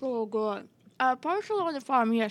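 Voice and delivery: talking with mouth full while chewing. Interview guest answering the host's question, talking with mouth full. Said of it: "sorry, my mouth is full".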